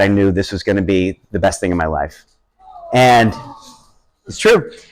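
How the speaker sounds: low voice catching, choked up with emotion. Telling of first holding the newborn and looking at her, choking up. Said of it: "now I just I'm choking up".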